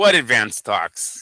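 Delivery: dry, sarcastic, doubting tone. Retelling what a fighter meant about the talks: imitating a sarcastic remark. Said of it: "with the sarcastic way".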